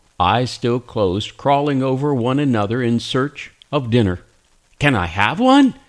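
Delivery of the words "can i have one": exclaimed, rising like a question. First-person narrator reads their own line on seeing tiny newborn balls of fur; exclaiming. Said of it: "I exclaimed".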